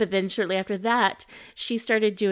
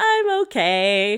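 mock giggly child voice, louder; 3 semitones higher, 7 dB louder than usual. Retelling a child's reply after she fell on her face: imitating a child giggling. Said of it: "giggles and says".

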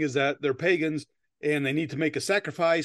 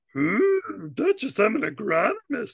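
put-on puppet voice, much higher pitch; 6 semitones higher than usual. Summarizing a film, the speaker voices the island leader's line: Fozzie voice sliding into Yoda. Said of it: "I couldn't tell if that was Yoda or Fozzie".

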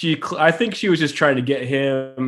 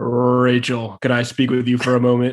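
put-on rumbling bass voice, lower; 3 semitones lower than usual. Imitating him calling to Rachel, rose in hand: rumbling Drew Martin bass voice. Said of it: "rumbling Drew Martin bass voice".

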